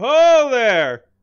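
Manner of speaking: loud, high shout carrying as if from afar.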